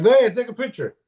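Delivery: defiant tone. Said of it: "I was like".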